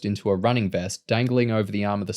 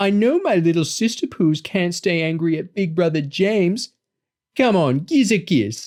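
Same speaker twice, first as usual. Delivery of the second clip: high, fake, babyish put-on little-kid voice; 8 semitones higher, 4 dB louder than usual. James coaxes his soaked little sister Lauren for a kiss, in a put-on baby voice. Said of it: "putting on a baby voice".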